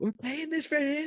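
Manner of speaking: put-on, very high-pitched shrill yelling. Teasing about the son's paid lessons, imitating a wife yelling. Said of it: "Your wife's just yelling at".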